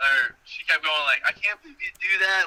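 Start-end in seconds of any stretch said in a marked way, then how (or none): 1.3-2.5 genuinely upset, disbelieving reaction. Retelling what she kept saying after the prank: imitating someone really upset. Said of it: "she was, like, really upset".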